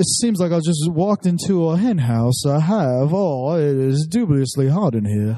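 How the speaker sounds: courtly, put-on southern gentleman accent. Speaker shows how a southern gentleman would talk to women, in a southern gentleman voice. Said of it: "You got to be a southern gentleman".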